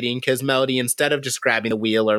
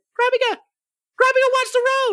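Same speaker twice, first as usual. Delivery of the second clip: mock shrill, very high squeaky shout. Speaker quotes someone shouting at Krabiga about the road, retelling a yell. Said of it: "you just hear".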